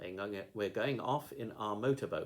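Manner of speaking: ordinary delivery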